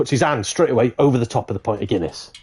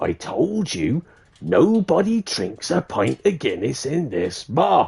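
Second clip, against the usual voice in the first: very slow, drawn-out video-game character voice; 2 semitones higher than usual. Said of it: "You sound like that character in Monkey Island in the Scum Bar".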